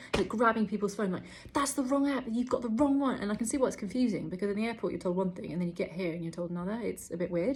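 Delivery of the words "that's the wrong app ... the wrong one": acted-out frazzled, aggressive, high, stressed shouting. Retelling a stressed man at the quarantine hotel, imitating his shouting. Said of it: "he's like shouting at everyone like".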